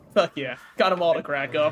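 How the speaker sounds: ordinary talk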